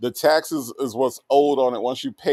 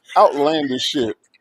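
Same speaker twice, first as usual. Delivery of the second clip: ordinary talk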